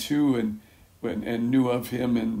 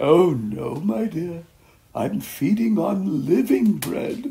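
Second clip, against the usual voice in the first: put-on drawn-out, very slow British accent; 7 semitones higher, 6 dB louder than usual. Retelling an old man's reply when told he must be tired, imitating Norman's British accent. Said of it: "I like to imitate him because he was British".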